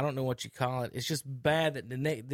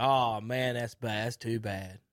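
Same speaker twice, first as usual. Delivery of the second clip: mock sarcastic tone, lower; 2 semitones lower than usual. Retelling someone's reaction to news, the speaker quotes him, retelling a sarcastic remark. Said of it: "Really sarcastic".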